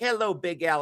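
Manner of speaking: every word carefully, precisely enunciated. Recalling how a man with dreadlocks would greet big al, imitating someone's careful enunciation. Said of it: "careful how he enunciated all of his words".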